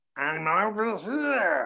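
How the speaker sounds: very high, loud, strange voice, drawn out. Recalling calling out during a quiet part in the movie theater, in a Gollum voice. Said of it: "when Gollum came out in the theater".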